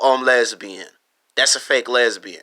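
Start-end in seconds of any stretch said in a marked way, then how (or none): none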